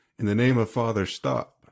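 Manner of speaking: shouted, commanding tone. Player's character, pinned by a woman, shouting a command at her. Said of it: "I'll shout".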